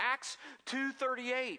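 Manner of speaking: high, loud, slow yell. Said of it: "she just kept yelling it".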